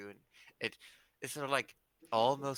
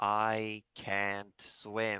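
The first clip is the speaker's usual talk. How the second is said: words spoken through a heavy sigh; 4 dB louder than usual. Voicing a dinosaur answering a plea for help: sighing while speaking. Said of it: "with a sigh".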